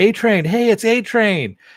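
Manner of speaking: mock very high, stretched-out, drawn-out scream. Retelling a plot scene where a character screams to a crowd: imitating someone screaming. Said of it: "he starts screaming out".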